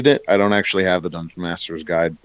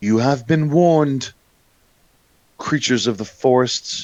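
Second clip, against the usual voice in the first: put-on high feminine voice; 6 semitones higher than usual. Game master voices a presence speaking from the tree: feminine voice. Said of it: "There is a feminine voice".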